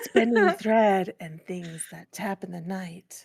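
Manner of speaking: joking whispered ASMR voice. Dared by the others to whisper the introduction into the mic: mock ASMR whisper. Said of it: "I'm going to whisper into the mic".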